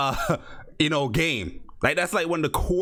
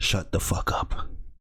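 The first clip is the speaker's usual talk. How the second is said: very low, deep, dead-calm, level voice; 8 semitones lower than usual. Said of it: "In that calm voice".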